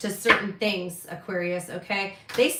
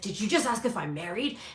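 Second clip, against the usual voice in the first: acted, bristling, super defensive retort tone; 4 dB quieter than usual. Retelling a guy's reaction to being asked if he's married, imitating a super defensive reply. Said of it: "the guy got super defensive with me".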